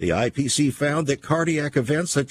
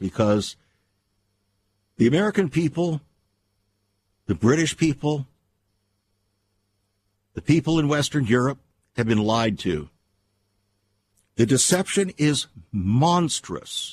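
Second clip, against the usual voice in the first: near tears, straining for composure. Radio host addressing his listeners as friends, holding back tears. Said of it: "I'm trying to hold back the tears here".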